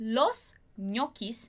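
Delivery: los ñoquis said slowly and carefully.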